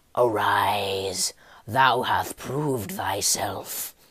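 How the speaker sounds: hoarse, raspy, authoritative voice, "arise" drawn out. Narrator voicing a figure addressing Jatvarn in a story: raspy, commanding voice. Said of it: "He spoke in a raspy, commanding voice".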